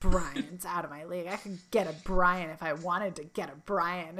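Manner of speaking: low muttering to himself, under the breath. Recapping a scene where Chandler is left alone: Chandler muttering to himself. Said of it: "Chandler's just left like muttering to himself".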